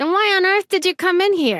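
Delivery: put-on very high New Jersey accent. Game character questioning a visitor at City Hall: Jersey accent. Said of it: "Jersey accent".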